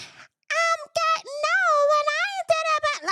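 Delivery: very high, slow, drawn-out voice. Mocking how Portia's voice changed in a room: imitating Portia's higher voice. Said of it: "your voice, uh, it went up higher than what it needed to".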